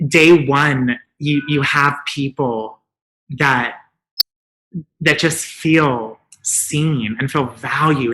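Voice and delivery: moved, emotional, slow delivery. Explaining what day one means for people who reach out, getting emotional. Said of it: "I did not mean to get emotional".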